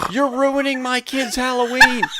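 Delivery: very loud, high-pitched, shrill screaming. Retelling a woman yelling out the car window at other drivers, imitating her screaming. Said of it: "She's screaming at the other drivers".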